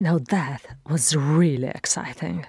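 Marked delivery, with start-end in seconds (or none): none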